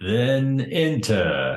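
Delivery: slow, high, solemn intoning in a big man voice. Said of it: "this enormous dude who's intoning at you".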